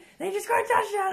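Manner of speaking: very high, loud, thrilled excited shriek. Retelling how dad reacts to a football game: imitating dad screaming. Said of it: "screaming at C J".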